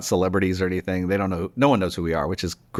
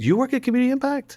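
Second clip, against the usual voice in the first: sudden delighted surprise, pitch rising much higher. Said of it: "changed completely".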